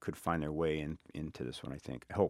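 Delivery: normal talking voice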